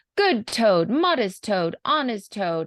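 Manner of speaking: put-on sarcastic, sneering, mocking cheer. Retelling a weasel's speech about toad: imitating a sarcastic mocking speech. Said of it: "they're being very sarcastic and just really mocking Toad".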